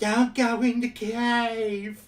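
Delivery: put-on skeleton voice, "cave" drawn out. Recalling the Casa Bonita skeletons, quoting them in a skeleton voice. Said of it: "skeleton voices had to be close to like a Skeletor impression".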